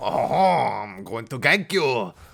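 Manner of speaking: exaggerated, over-the-top French accent, drawn out. While playing a champion in a game: french accent. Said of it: "Behold my immaculate French accent".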